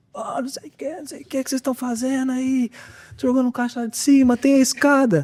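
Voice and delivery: put-on, very high, shrieked yelling. Retelling how a man came out after a box hit his car: imitating a man shouting. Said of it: "Sai, gritando".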